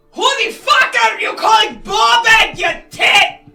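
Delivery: shouting scream. In a tabletop game, a player's character screams off to the side, screaming. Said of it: "I'm gonna scream off to the side".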